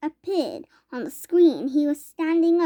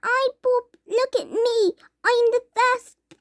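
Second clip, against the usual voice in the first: tiny, high, squeaky mouse-like voice; 9 semitones higher than usual. Narrator reading, a tiny voice comes out of the television: tiny squeaky voice. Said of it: "A tiny little voice, no louder than the squeaking of a mouse".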